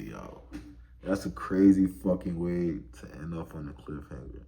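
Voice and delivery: ordinary talk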